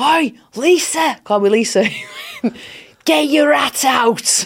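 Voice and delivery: swooping, hollered mock Scouse shout. Retelling what a Scouser once shouted at them in Liverpool, retelling a Scouse shout. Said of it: "A Scouser once shouted to me".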